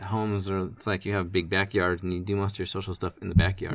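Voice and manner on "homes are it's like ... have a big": usual speaking voice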